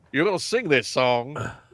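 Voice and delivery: fake cartoonish rooster-style drawl. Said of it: "He's Fo-, Foghorn Leghorn".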